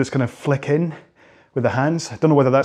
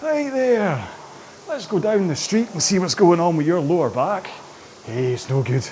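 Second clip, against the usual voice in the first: put-on Scottish comedian voice, pitched higher; 4 semitones higher than usual. Voicing a complaining lower back: Billy Connolly voice. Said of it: "sounds a little bit like Billy Connolly".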